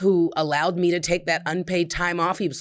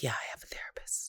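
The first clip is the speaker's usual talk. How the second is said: hushed, breathy, near-whispered voice; 6 semitones lower, 15 dB quieter than usual. Recalling how they used to admit having a therapist, in a hushed voice. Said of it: "I used to say that in a hushed voice, like".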